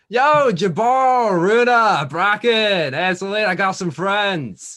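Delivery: high, slow, friendly calling character voice.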